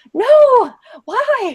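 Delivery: high, loud, irate outburst. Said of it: "I got so irate".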